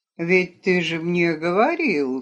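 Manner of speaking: ordinary delivery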